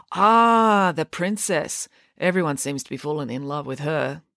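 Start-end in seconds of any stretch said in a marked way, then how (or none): none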